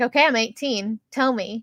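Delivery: ordinary delivery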